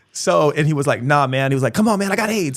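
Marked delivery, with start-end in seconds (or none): 1.8-2.6 mock shrill, high, screamed shouting. Retelling how a man asking for money screamed at them, retelling a scream. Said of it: "Like literally just screamed".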